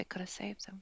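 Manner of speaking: very softly murmured under her breath. Playing a character who touches the papers, very softly under her breath. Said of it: "say very softly under her breath".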